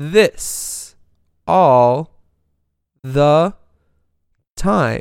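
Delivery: slow, halting, pausing after every single word. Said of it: "she talks like".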